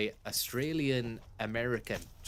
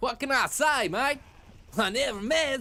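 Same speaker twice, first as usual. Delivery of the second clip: loud, high, exaggerated Australian accent; 13 semitones higher, 7 dB louder than usual. Repeating the character's line again, mocking it: exaggerated australian accent. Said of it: "goes a bit Australian".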